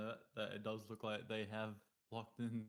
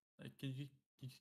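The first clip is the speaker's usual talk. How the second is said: halting, stuttering repeated restart, tripping false start; 4 semitones higher than usual. Starting a question to the other speaker mid-discussion, stuttering. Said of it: "I'm stuttering".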